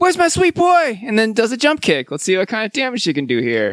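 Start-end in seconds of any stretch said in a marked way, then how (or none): 0.0-1.0 shrill, very high, loud yelling. Playing a game, voicing a character who yells out: Mrs. Voorhees yelling. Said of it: "She just yells out".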